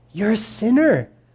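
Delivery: gentle, loving delivery. Showing how to tell someone a hard truth: said lovingly. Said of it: "Let's say it lovingly".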